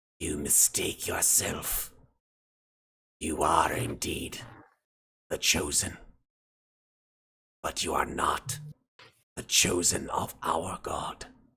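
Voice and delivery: quiet, rasping creature voice. A game master voices a creature speaking into a character's mind, rasping voice. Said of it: "you hear this sort of rasping voice".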